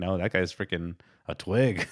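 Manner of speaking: ordinary talk, nothing marked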